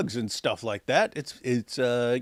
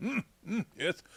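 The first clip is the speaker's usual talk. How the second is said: put-on arrogant voice, higher and quieter; 6 semitones higher, 11 dB quieter than usual. Imagining a serious response to a challenge: imitating arrogant Muhammad Hijab. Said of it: "a serious response where he's all arrogant".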